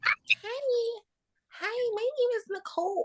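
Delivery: high, soft put-on voice, drawn-out "hi". Challenged by co-hosts to go higher, put-on high-pitched voice. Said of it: "Can't go higher".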